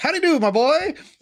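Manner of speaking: little squeaky gnome voice, very high, rapid. Playing a gnome greeting a kid, in a squeaky, really fast gnome voice. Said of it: "a little kind of squeaky, really fast gnome type voice".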